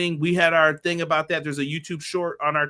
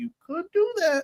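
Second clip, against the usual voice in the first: very high-pitched mocking voice. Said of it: "I'm like".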